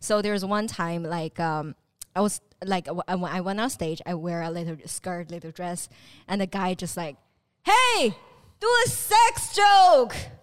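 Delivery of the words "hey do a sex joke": put-on very loud shout, very high, slow, drawn out. Retelling a heckler's demand from the audience on stage: imitating a heckler yelling loudly. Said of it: "really loud".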